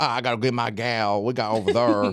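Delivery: put-on St. Louis local accent. Imitating how Saint Louis classmates from college talk: imitating a St. Louis accent. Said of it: "you up here talk about".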